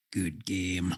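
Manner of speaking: low, soft, murmured taunting tone.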